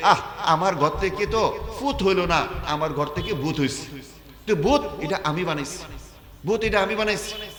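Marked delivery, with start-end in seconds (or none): none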